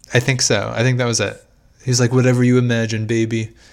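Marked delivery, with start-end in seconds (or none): 2.1-3.5 creepy, leering, suggestive manner of speaking. Quoting what Andy told the waitress: Donald Trump impression. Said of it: "that was a very good Donald Trump impression".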